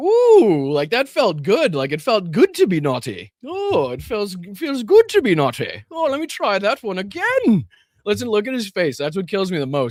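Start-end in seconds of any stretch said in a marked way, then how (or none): 0.0-7.7 giddy, self-pleased sing-song with drawn-out ooh. Imitating the king's reaction after a joke: imitating the king. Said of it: "he's like".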